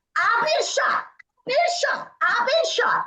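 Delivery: mock woman's voice, very high-pitched insistent shouting. Retelling how a woman arrived at the emergency department: imitating a woman shouting. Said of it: "she's shouting at the top of her lungs".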